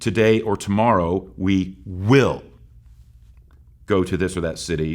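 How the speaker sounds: heavy, strong stress on will. Rereading an opening verse to highlight one word: stress on will. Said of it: "I will purposefully emphasize the word".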